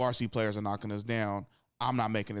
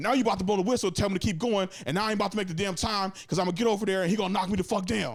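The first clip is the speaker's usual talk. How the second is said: shrill, high, loud yelling rant; 11 semitones higher, 5 dB louder than usual. Speaker reenacts what they yelled at the coach, retelling own yelling. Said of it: "and then I'm yelling at him".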